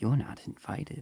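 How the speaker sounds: eerie, ghostly high whisper. Narrating a voice the party hears in their minds, whispering. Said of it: "a voice whispering in your mind".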